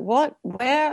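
put-on bewilderment. Retelling reacting to instructions given too fast: mock-confused. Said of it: "I was like".

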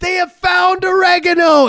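excited yelling, high and loud. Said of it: "texted me right away and was like".

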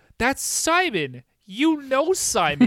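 high, slow, over-careful, patronizing voice.

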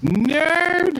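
high, squeaky, squealing nerdy voice.

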